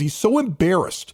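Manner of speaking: ordinary delivery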